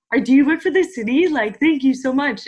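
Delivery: exaggerated Canadian accent, very loud and high-pitched. Quoting people who have thanked them, put-on canadian accent. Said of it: "We're laughing at the accent you just checked on".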